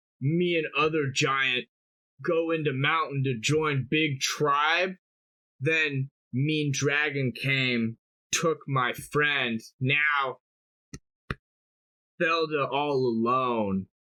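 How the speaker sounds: crying a little, sobbing, broken giant voice. Voicing a giant telling of a dragon taking her friend, sobbing a little. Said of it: "sob a little bit and be like".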